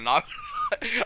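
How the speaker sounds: high, loud, laughing through the words.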